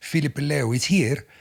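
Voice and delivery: eager, loud, high broken English. Retelling what a little Italian guy told him, imitating bad English. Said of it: "he says in bad English".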